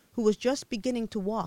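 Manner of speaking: ordinary delivery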